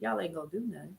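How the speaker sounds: very soft, hushed, needling, taunting bully-like tone. Telling listeners they will do nothing: taunting like a bully. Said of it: "I sound like I was probably the bully".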